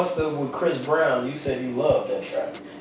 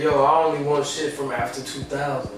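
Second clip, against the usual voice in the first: normal talking voice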